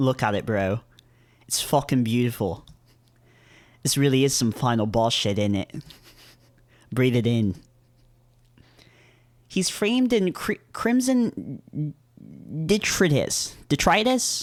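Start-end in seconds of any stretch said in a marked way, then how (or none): 0.0-7.5 put-on British accent. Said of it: "Do British people say bro?".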